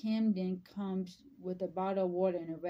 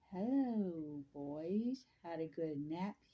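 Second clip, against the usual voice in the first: very slow, creepy drawl; 6 dB quieter than usual. Jessica greeting two boys in a story scene, in a weird, creepy voice. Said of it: "back in a weird, creepy voice".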